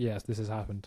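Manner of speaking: put-on deadpan delivery. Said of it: "complete straight face".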